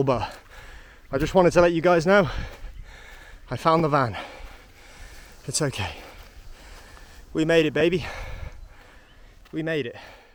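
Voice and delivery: panting, winded, out of breath. Speaker walking up a hill updates viewers, panting, out of breath. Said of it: "I'm panting so hard walking up this hill".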